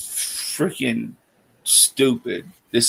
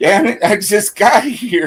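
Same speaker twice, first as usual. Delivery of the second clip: imitated breathless panting, higher and louder; 9 semitones higher, 5 dB louder than usual. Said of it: "damn near dying and stuff, trying to breathe".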